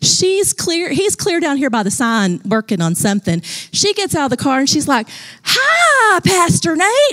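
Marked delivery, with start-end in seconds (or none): 5.4-7.1 put-on very high toddler holler with a rural twang. Retelling a three-year-old girl greeting the pastor; little hick voice. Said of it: "she had this little hick voice".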